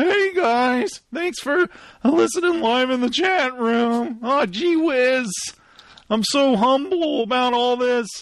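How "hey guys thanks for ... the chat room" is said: voice breaking and cracking as it goes. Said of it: "What's happening to my voice?".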